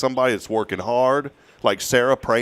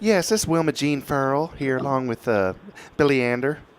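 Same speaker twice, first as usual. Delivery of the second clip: clumsy, horrible put-on woman's voice; 3 semitones higher than usual. On a radio prize segment, answering the phone line: horrible fake lady accent. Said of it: "This is a horrible lady accent by me".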